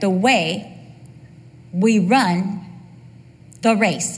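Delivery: slow, deliberate, halting, broken into pieces. Repeating a tongue-twisting phrase, speaker pauses to get it right. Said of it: "I'm going to pause so I can get this right".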